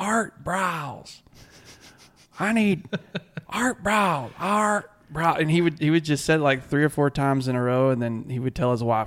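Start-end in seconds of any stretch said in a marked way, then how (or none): 0.0-5.4 very slow, high, stretched-out yell. Retelling a fan's reaction to a bad series: imitating a fan yelling. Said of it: "he just started yelling".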